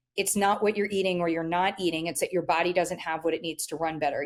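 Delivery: ordinary talk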